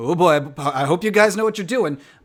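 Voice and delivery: loud voice of a big, brawny, muscular pig. Voicing a big muscular pig who sets another character down: muscular pig character voice. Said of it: "the big muscular pig with the overalls ... and he's like".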